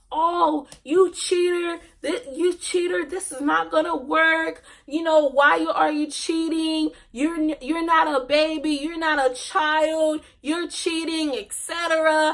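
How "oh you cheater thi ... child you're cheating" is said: mild, pitched-up, playground-style yelled call. Retelling how friends accused the speaker of cheating: imitating friends yelling. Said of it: "her friends are yelling".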